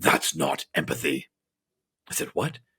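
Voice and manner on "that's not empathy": very low, scornful, disdainful delivery. Recounting a conversation, the speaker quotes a man's reply to them: imitating disdain. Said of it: "looked at me with disdain and said".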